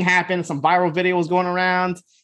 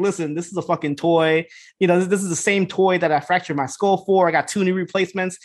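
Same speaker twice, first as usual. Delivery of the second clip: ordinary talk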